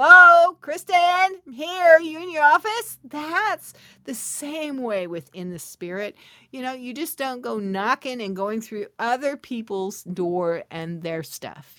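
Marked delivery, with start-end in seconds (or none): 0.0-3.0 play-acted, very high, loud hollered calling out. Retelling how friends call out on opening the door, in a loud voice. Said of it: "they'd say in a loud voice".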